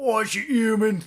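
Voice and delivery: put-on London accent. Quoting the Squirrel from a game: the Squirrel's Londoner pub voice. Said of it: "Londoner pub voice".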